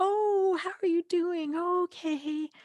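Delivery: anxious, nervous, very high and very slow. Explaining how nervous people start talking, demonstrating a nervous higher voice. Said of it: "start talking in a higher voice".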